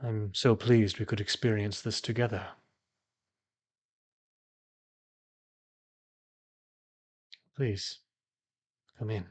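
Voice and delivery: serene, even, calm and resonant voice. A robed figure welcomes visitors into a small torchlit chamber, calm voice. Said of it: "a calm voice resonates through the small chamber".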